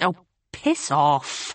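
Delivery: cross, irritated, annoyed tone. Hannah answers April, who is laughing at her, crossly. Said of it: "Hannah said crossly".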